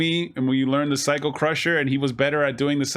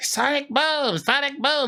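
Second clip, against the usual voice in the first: nerdy, dorky voice; 12 semitones higher than usual. Recalling with friends a game character's voice from school: nerdy Guile voice. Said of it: "He sounds like a nerd".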